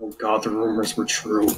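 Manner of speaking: low, soft mutter under the breath. Voicing a character reacting to the masked man: muttering under his breath. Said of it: "mutters under his breath".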